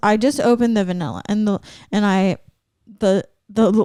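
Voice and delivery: stuttering, stammering, tripping over words. Telling a co-host about opening vanilla while making cookies, stuttering. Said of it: "I'm stuttering right now".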